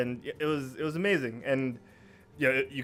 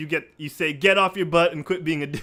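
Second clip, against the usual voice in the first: ordinary talk, nothing marked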